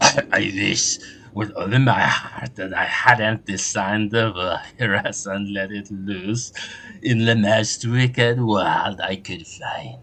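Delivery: hoarse, husky voice. Octopus-headed hacker clown answering with a story, hoarse voice. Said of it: "A hacker clown with an octopus head predicting the future. / A hacker clown with an octopus head predicting the future. ... The feelers on their face moved excitedly. / I'm a hacker. ... I wish with a".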